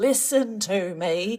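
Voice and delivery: top-of-voice shout. Retelling shouting at a noisy teen class: imitating own past shouting. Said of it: "shouting at the top of my voice".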